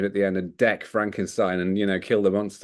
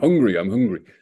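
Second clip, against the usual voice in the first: put-on speaking with Bristol accent; 4 dB louder than usual. Imagining the monster speaking his line in a Bristol accent. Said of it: "if they let him speak in his Bristol accent".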